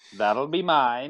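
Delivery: high put-on cartoon voice. Doing a sound effect while playing: Grinch voice. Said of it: "I do the Grinch".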